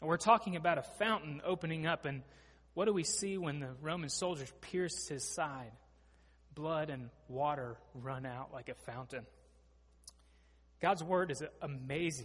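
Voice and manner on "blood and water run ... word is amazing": choked-up, breaking voice catching with emotion. Speaker preaching on a scripture passage, getting choked up. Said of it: "I'm getting choked up".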